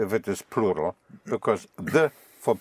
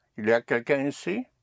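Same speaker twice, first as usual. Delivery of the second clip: rising pitch on ici; 3 semitones higher than usual. Explaining French questions made by inflection alone: rising question intonation on ici. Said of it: "you just use inflection to question".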